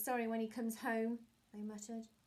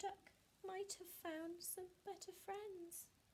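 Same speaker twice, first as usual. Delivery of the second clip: very quiet, small, sorrowful half-whisper, pitched up; 9 semitones higher, 11 dB quieter than usual. Reading a story aloud, the cat speaks after searching for the missing duck: sad little half-whisper. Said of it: "the cat whispered in a sad little voice".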